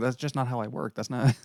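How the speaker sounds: easygoing, laid-back, casual regular-guy voice. Retelling arguments on a film set, doing a Vince Vaughn impression. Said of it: "There's my Vince Vaughn impression".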